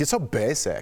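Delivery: phony put-on German accent. Imitating Anna cornered in the show: Anna's fake German accent. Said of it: "It's her fake German accent".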